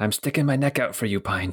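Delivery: whispering voice. Voicing a guard who quietly warns a player at the gate: whispering guard. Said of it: "then he whispers to you and he says".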